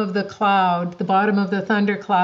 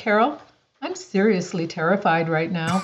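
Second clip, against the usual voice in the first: utterly calm, composed, matter-of-fact delivery. Retelling what the speaker told a companion at 16,000 feet, retelling in a calm voice. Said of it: "just as calm as could be".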